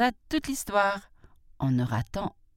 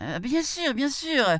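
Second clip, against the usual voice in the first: mock-trembling cry, higher pitch; 8 semitones higher than usual. The jackal answers the tiger, crying out, pretending to tremble. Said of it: "s'écria le chacal, en faisant semblant de trembler".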